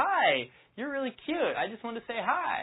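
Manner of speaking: overly energetic, high, overeager, lilting up at the ends. Showing an unpowerful way to say hi: high-pitched, rising, overexcited. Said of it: "too overly energetic ... Notice how high my tonality is. Very high-pitched, and it's going up at the end of my sentences like I'm really excited".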